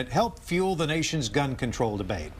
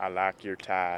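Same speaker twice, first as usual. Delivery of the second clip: casual Texas accent, everyday speech; 7 semitones lower, 3 dB quieter than usual. Asked to say something in a Texas accent: Texas accent. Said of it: "What do you want me to say in Texas accent?".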